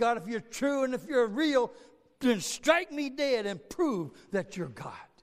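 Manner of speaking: mocking, scornful, defiant, jeering tone. A preacher retells once cursing god, retelling his mocking voice. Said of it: "my mocking voice".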